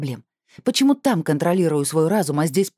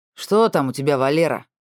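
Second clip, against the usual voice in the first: rough, coarse, rude, jeering taunt. A passing policeman calls out about a woman at the desk: rough and mocking. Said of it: "прозвучал грубо с издевкой".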